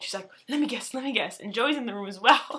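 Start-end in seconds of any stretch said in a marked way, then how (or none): 0.5-1.4 bubbly, eager, excited and giddy pleading. Retelling a mother begging to guess the news: imitating excited giddiness. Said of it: "excited and giddy".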